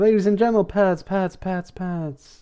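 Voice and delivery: big-event monster truck rally announcer call. Recapping a pet shop scene where a character announces a stunt: monster truck rally announcer voice. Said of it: "doing a monster truck rally voice".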